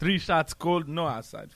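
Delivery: put-on Russian accent with a Jamaican-sounding lilt. Joking about russian cold weather: russian accent sounding jamaican. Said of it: "That's Jamaican".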